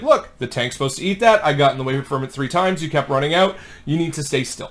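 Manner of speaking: plain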